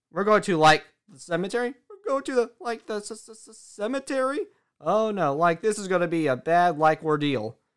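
laid-back hippie-style voice, with stuttering. Describing a cartoon character's speech habits, imitating Shaggy Rogers. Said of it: "like when he says".

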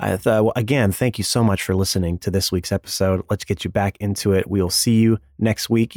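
quiet, cool morning voice. Podcast host closes out the week's episode in a quiet, cool morning voice. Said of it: "let me close this one out with my quiet, cool morning voice".

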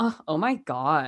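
deep husky put-on voice. Retelling Paris Hilton's first line in the movie: deep Paris Hilton voice. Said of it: "Like, it is deep".

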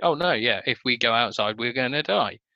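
acted nonchalant, casually unconcerned tone. Describing a film character explaining things to kids, imitating a nonchalant tone. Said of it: "demonstrated in such a nonchalant way".

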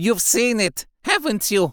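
feral, shrill, high-pitched screeching outburst. A narrator reads a feral man's question to Phineas, screeching. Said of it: "he screeched".

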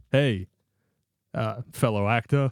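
stiff, wooden, stilted delivery, like bad acting. Imitating a basketball player acting badly on screen: Kevin Durant's bad acting. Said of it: "he comes lumbering onto the screen and goes".

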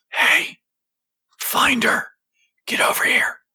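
low, hushed whisper, just audible. Someone in a darkened alleyway calling out to the player, hushed whisper. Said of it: "there is a hushed whisper".

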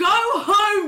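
high, annoyed, exasperated yell.

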